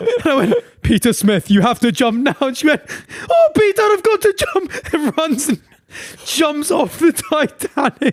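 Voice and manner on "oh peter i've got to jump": put-on very high-pitched elderly Scottish woman voice. Retelling a lady's reply during a vr headset session, imitating an old scottish lady. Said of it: "old Scottish lady being like".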